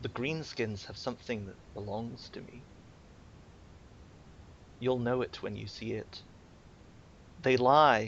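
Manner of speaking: soft-spoken creature voice. Storyteller voicing a creature that gives the listener's character a task, soft creature voice. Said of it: "its voice is quite soft".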